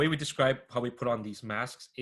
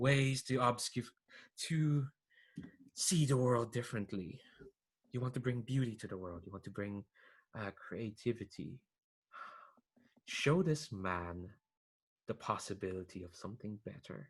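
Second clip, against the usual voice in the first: bubbly, giggly, effervescent character voice, quieter; 6 dB quieter than usual. Voicing a character speaking to young Micah, giggly, effervescent voice. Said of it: "this kind of like giggly, effervescent kind of voice".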